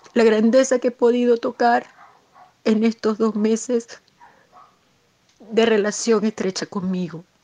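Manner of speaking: emotional crying, tearful and moved. Talking to Julio, admitting to being deeply moved, crying. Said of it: "estoy llorando de conmovida".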